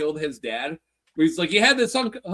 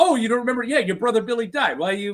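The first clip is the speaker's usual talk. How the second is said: put-on plain, flat, offhand, matter-of-fact; 3 semitones higher than usual. Retelling a scene where Little Carmine answers matter-of-factly: Little Carmine answering matter-of-factly. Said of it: "the fact he answers matter-of-factly".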